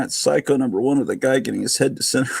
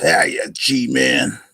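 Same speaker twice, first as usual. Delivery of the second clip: put-on tough-guy gangster voice. The speaker repeats his greeting to a viewer, now in a gangster voice. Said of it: "I should do that with a gangster voice".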